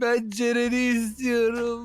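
crying, sobbing voice. A son answers his mother, who tells him to stop crying, still crying. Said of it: "ne ağladın bu kadar ya?".

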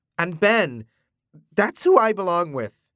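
voice cracking. Reading a novel, the narrator voices a man telling another who he belongs with, voice cracking. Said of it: "voice cracking".

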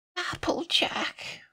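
feeble, weak, breathy, whispered croak. Fluttershy calls to Applejack through the closed door; weak croak. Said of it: "Fluttershy croaks weakly".

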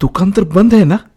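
astonished. Reading a story aloud, voicing a character asking the others a question, surprised. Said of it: "आश्चर्याने बोलला".

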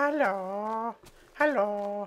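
high, squeaky voice, "hello" drawn out. Imagining how a creeper would say hello, Creeper voice. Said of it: "a super squeaky voice, you know? I just think it'd be really funny to listen to a creeper like".

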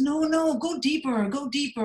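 put-on American accent, high, slow and drawn out. Retelling what a man said to him, in a put-on American accent. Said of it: "he's got his American accent on".

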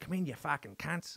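put-on Australian accent. Retelling what a man said when they arrived, in an australian accent. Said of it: "as I'm doing this Australian accent".

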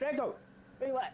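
shouting. Calling a dog while playing a game, yelling at the dog. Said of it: "Stop yelling at your dog like that".

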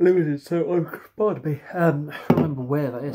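mid-yawn. Reviewer reading a beer label at the end of a long day, yawning. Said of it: "I shouldn't be yawning on a beer review".

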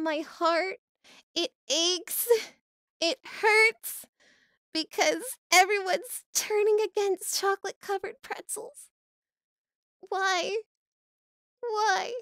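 exaggerated mock sobbing grief. Gaming streamer lamenting during play, mock crying. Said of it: "I'm gonna cry".

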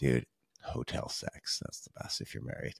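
quiet, breathy whispering. Speaking from a home office where he has to keep it down, whispering. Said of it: "I got to whisper here".

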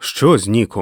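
shouting. A man grabs a woman by the shoulders, demanding news; shouting. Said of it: "кричав Стю".

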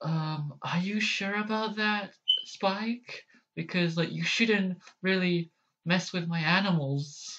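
small, soft, high, quieted cartoon-pony voice. Working through pony character voices, the speaker tries a quiet Fluttershy voice. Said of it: "I'm gonna try to quiet like my voice as well".

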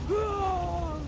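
high, loud, mock angry scream.

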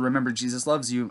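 ordinary talk

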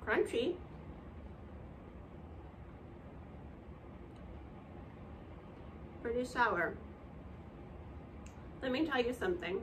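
talking with mouth full. A teacher tastes the green apple in front of her class, talking with mouth full. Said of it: "Let me swallow my food first".

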